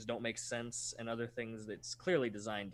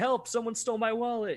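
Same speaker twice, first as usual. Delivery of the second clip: very loud, high-pitched shout; 11 semitones higher, 9 dB louder than usual. Describing an animated video, voicing a guy who shouts, imitating a shout for help. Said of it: "some guy shouting".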